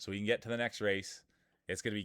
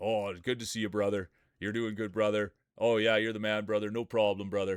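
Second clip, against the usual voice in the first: put-on chilled-out voice, slightly deeper; 2 semitones lower than usual. Describing how Cage talks, the speaker imitates him: Cage voice, a little deeper. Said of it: "he kind of talks like this, you know, like a little deeper than me".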